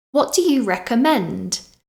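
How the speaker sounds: voice climbs in pitch on the final word recommend. Asking a waiter for a recommendation, rising pitch at end on recommend. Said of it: "Do you hear my voice go up at the end?".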